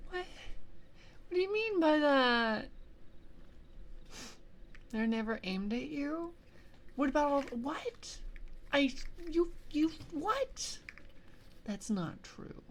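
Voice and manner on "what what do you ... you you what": mock distraught voice. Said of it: "that's how distraught I am".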